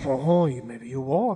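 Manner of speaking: put-on French accent on English words. Joking that tourists in Paris will have to walk: French accent. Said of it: "That was a perfect French accent".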